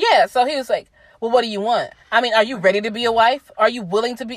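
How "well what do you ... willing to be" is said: put-on stern, militant man's voice. Retelling what the man asked on the phone: imitating a militant, stern man. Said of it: "and very militant and stern".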